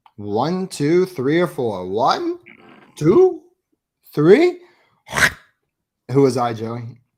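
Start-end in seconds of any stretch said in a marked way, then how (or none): 1.9-4.6 pitch way up, loud and swooping. Counting like the Tootsie Pop Owl: Tootsie Pop Owl voice. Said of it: "I was the Tootsie Pop Owl".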